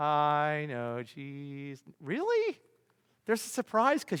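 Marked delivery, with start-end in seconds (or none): 0.0-1.8 very slow, drawn-out, joyless mock cheer. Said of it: "you don't sound very happy".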